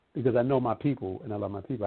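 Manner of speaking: ordinary talk, nothing marked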